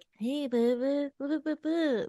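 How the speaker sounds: put-on high-pitched baby-talk babble. Retelling a post of someone talking to a kangaroo: imitating baby talk to a dog. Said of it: "baby talking to him".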